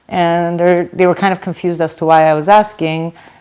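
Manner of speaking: ordinary talk, nothing marked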